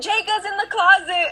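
shrill, very high, drawn-out wailing scream. Retelling how a crying girl came into the room, retelling a scream.

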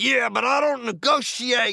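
shrill, very loud, high, worked-up excited outburst. A guest describing a hostage scenario gets carried away: getting excited. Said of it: "sorry, I'm getting excited".

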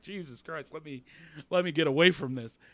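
put-on embarrassed tone. Retelling a wife's remark while her husband screams at sports: imitating an embarrassed wife. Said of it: "you could tell she was embarrassed".

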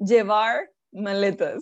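put-on American accent in Spanish. Retelling what their mom said to the boy from the ballet, imitating an American accent. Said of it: "como si fuera americana con acento de no sé qué cosa".

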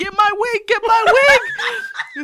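put-on very high, very slow, drawn-out hollering. Retelling their wig landing in the pool: retelling yelling at the lifeguard. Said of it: "I'm yelling at the lifeguard".

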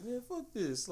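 very high, soft, quavering voice near tears. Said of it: "they had that quiver in the voice".

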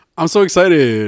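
put-on, forced enthusiasm. Reading a show description aloud to the others, with fake-sounding excitement. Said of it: "That sounds so fake".

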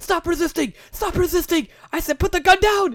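mock shrill yell, high and as loud as possible. Retelling a commentator's call during a fight game: imitating Acoustic yelling as loud as possible. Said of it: "you just hear Acoustic yelling as loud as possible".

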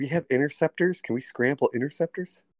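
hushed whisper, pitched a little high. Speaking in character to the others during the game: whispering. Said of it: "I whisper".

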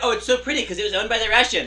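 mocking, derisive voice. Throwing the other speaker's words back at them: mocking imitation of the other speaker. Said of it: "but now you're like".

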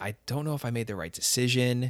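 normal talking voice

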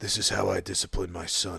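put-on gruff American voice. Retelling a director's disciplining story in a Clint Eastwood voice. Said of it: "an American sort of, uh, sort of, um, Clint Eastwood".

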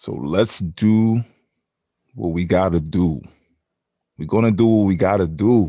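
clumsy, loud put-on Italian accent. Podcast host opening the episode before welcoming listeners back, bad italian accent. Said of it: "That was my bad Italian impression".

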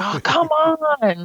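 mock gym teacher scream, very high, on drawn out. Retelling how a high school coach screamed at kids: imitating a coach screaming. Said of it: "you would hear her screaming at kids".

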